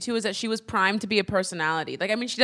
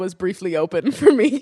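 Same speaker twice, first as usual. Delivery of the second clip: talking through bursts of laughter. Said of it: "I'm sorry, I'm laughing".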